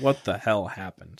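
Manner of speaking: normal talking voice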